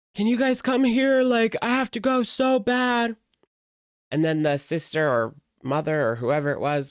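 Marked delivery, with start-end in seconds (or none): 0.2-3.2 mock very high, shrill, blaring voice, very loud. Retelling a stranger's call on speakerphone, imitating someone talking loudly. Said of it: "On speakerphone being so loud".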